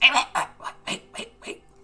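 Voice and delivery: fast, urgent, rushed goblin voice calling out. Narrating to Alyssa as a goblin stops her; goblin voice. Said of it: "a goblin who says".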